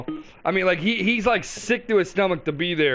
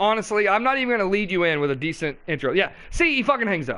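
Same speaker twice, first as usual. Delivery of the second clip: ordinary delivery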